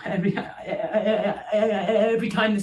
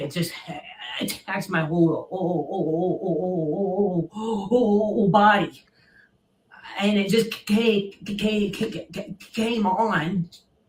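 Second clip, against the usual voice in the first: heavy stuttering. Explaining why he wanted it filmed, stuttering attack. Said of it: "I stutter attack".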